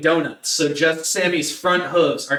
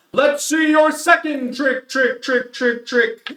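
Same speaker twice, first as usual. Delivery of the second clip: loud, booming, high arena announcer call with echo; 9 semitones higher than usual. Retelling the event, the speaker voices the arena announcer: booming announcer voice. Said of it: "the announcer's voice booms out".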